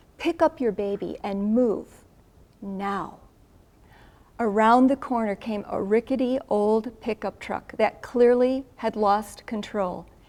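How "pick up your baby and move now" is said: mock firm, commanding voice of authority. Retelling what a very tall man said at the blanket: retelling a commanding order. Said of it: "in a very commanding, a very authoritative voice".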